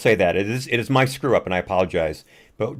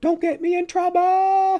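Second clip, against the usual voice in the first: put-on girlish scream, much higher pitch, slower. Recounting a man's reaction in a video, imitating a girlish scream. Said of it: "I did a pretty good imitation of him".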